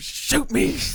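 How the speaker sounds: yelling. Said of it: "He's yelling at him".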